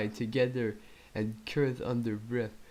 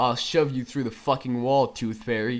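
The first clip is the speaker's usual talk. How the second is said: bad, fast growling voice; 6 dB louder than usual. Reading a story aloud, James threatens Lars: James growling. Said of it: "he growled".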